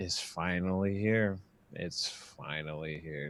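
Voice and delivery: low, slow passive-aggressive tone, loaded with attitude. Retelling what she said after six years of built-up anger, mock passive-aggressive tone. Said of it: "with the most like passive aggressive tone of all time".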